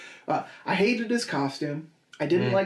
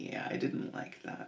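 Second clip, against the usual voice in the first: very soft, whispered put-on voice. Retelling what Mark said about a film: Mark impression. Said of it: "I can do a very good Mark".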